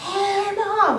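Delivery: loud, high-pitched yell.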